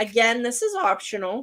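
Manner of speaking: voice breaking and cracking mid-line. Explaining an optional step to viewers, voice cracking. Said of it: "Oh, my voice cracked".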